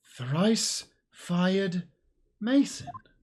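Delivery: drawn-out disbelieving tone. Speaker concluding by process of elimination who it is, slow, in utter disbelief. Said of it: "Why did you say it like that".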